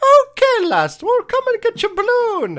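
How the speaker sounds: very high, sing-song, swooping leprechaun voice. Describing a movie actor who sounded like a leprechaun; leprechaun voice. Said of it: "he sounded like he was being like a leprechaun".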